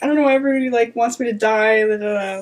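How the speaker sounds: mock tearful, whining delivery. Retelling an interview clip, imitating Rachel Zegler crying. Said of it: "she's crying".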